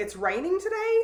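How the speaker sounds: rising, question-like tune on today. Explaining how tone of voice changes meaning, saying it with questioning intonation. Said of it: "overlap a tone of voice and say".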